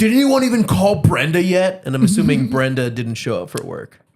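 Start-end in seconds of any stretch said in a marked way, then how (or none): 0.0-1.8 acted, fed-up, angry, loud, high pissed-off outburst. Customer retelling a man running out of the kitchen, imitating a pissed-off guy. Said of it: "he's all pissed off".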